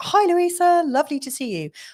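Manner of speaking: sudden jump to a very high-pitched voice. Greeting a viewer who just said hello, in a high-pitched voice. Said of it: "I went all high pitched there".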